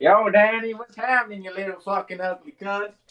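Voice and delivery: fake, put-on American accent, played broad. Asked to do an American accent, greeting someone in a put-on American accent. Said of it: "Do your American accent".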